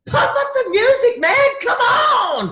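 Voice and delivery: shrill, full-volume high yell, "on" stretched. Retelling turning around on stage to yell at the dj, acting out a yell. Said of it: "Like basically just yelled at you".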